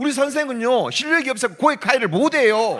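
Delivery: high-pitched shouting.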